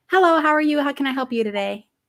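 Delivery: quick, polite, professional customer-service phone voice. Showing how they code-switch when dealing with corporate america, formal corporate greeting voice. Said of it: "We have to code switch".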